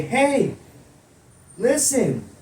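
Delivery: put-on tiny, very high, quiet childlike voice. Narrating a voice heard near the light on a path, in a small quiet child's voice. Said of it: "a small, very quiet voice, almost like a child's voice".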